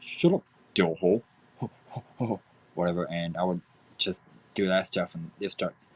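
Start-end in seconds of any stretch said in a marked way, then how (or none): 0.0-1.2 half-remembered attempt at a cartoon character voice. Recalling how people asked him to do the voices: Butt-Head voice. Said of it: "I know I can't do Buttheads now, but just for representation".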